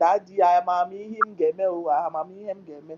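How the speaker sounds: play-acted slow, tearful, crying pleading, words dragged out. Retelling how she cried to her daddy: imitating someone crying. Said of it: "She was crying".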